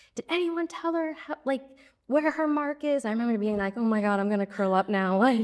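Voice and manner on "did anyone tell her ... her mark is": high-pitched yelling. Speaker recalls a director yelling at her when she was new, imitating someone yelling. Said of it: "I remember him yelling at me".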